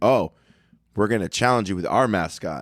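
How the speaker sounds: plain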